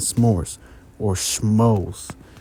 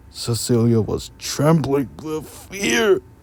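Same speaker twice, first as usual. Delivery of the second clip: read out of breath, breathless, slightly high; 6 semitones higher than usual. Reading a story aloud and running out of breath, out of breath. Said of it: "Sorry, I was out of breath".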